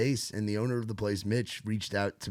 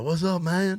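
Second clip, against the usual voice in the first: put-on Cajun accent, raised and high-pitched; 9 semitones higher, 6 dB louder than usual. Retelling how Justin walked in and greeted them, imitating Justin's Cajun accent. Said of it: "come up with his Cajun Kunas accent".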